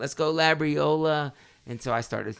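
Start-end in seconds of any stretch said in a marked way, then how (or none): 0.0-1.3 put-on shouted, screaming cheer in an Italian accent. Retelling sitting beside a wrestler's mom at the finals, imitating Labriola's mom screaming. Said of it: "sounded like an Italian accent".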